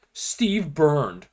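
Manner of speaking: ordinary talk, nothing marked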